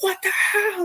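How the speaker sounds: very high-pitched, shocked cry.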